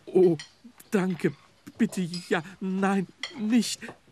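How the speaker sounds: halting, stumbling, very high stammering stutter. A snowman answering the forester's wife's offer of cake, stuttering. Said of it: "Stotterte Willi".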